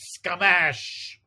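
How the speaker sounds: high, loud, comic sound-effect shout. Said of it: "the great, um, sound effect".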